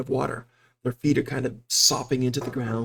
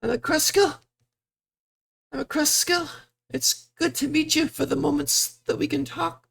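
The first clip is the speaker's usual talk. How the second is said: crying heavily, speaking through sobs. Voicing a woman character introducing herself, speaking through heavy sobs. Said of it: "She's just saying this through sobs, very heavy sobs".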